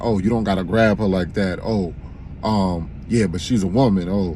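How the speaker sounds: usual speaking voice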